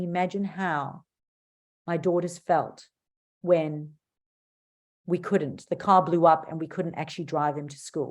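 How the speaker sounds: quiet, hushed voice with a low, dropped tone. Public speaking tip on varying your tone: slower, quieter, lower tone. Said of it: "slowing down and quietening and sitting and going".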